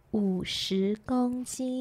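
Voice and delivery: quiet secret murmur. Retelling what he sneaked into her ear while she rested, sneaky whisper in ear. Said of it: "偷偷的在我的耳边就说".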